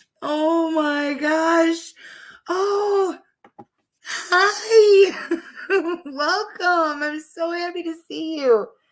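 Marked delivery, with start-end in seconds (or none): 2.5-8.7 high, very slow crying with laughter. Greeting people as they arrive, laughing hard. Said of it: "they have me laughing so hard that I'm crying".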